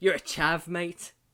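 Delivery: horrible, loud, fake put-on English accent. Mocking the reputation of people who wear that jacket: horrible English accent. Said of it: "That was a horrible English accent".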